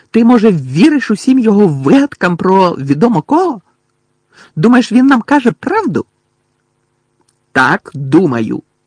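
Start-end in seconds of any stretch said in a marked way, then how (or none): 7.5-8.5 shouting angrily. Narrator reads a boy's answer in a dormitory argument, angrily shouting. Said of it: "сердито крикнув Рон".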